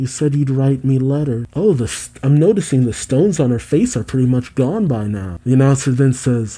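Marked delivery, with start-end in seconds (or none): none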